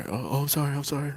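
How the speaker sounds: soft, meek, timid and flustered voice. Retelling how people walking by apologize to him, imitating a timid apology. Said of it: "With they heads down".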